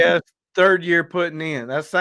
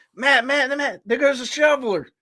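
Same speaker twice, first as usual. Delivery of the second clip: mock very high, shrill yell, repeated; 9 semitones higher than usual. Retelling spotting a duck at the store platform: retelling own yell. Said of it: "I start yelling".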